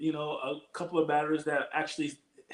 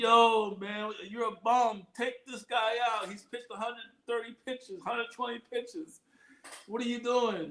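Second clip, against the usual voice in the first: acted-out rowdy jeering yell, high pitched; 7 semitones higher than usual. Talking about managers who keep a tired pitcher in: imitating fans yelling. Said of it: "And everybody's yelling".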